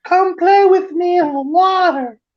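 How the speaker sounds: put-on very high, coaxing, luring little-kid voice. Describing how the monster Otter Man calls people into the water, in Otter Man's luring child's voice. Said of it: "call you in as like a child's voice".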